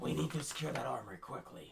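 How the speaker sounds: rough voice full of gravel. Urging the party to secure the armory, in character: gravelly voice. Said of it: "Can you hear the gravel in my voice?".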